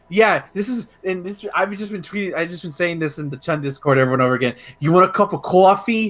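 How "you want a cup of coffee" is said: put-on thick, hard Boston accent. Imitating a game character's trailer line: imitating a thick Boston accent. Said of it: "So she talks like that".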